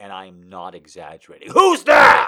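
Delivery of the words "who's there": sudden, alarmed scream at full volume. Retelling a sudden loud pop in the shoulder: imitating own scream. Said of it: "I immediately screamed".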